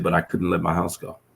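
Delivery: ordinary delivery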